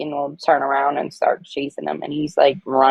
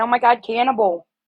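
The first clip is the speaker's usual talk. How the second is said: play-acted, high, shrieking screamed exclamation; 7 semitones higher than usual. Retelling seeing her pig fed bacon bits, retelling own screaming. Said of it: "and I was screaming".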